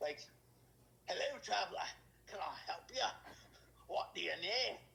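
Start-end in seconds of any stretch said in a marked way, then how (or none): 1.1-4.8 really bad put-on Scottish accent, fantasy dwarf voice. Speaker showing the voice they use for random dwarves: really bad scottish dwarf accent. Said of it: "I just do like a really bad Scottish".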